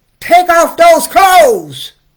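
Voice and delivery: mock shrill, very high, very loud mean shout. Recounting what dad said to them as a child, imitating his higher, meaner voice. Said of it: "he said in a higher, meaner voice".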